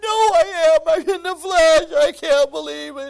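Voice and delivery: very high-pitched, very loud, drawn-out sobbing. Retelling his phone call with his brother, imitating his own crying. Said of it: "crying on the phone".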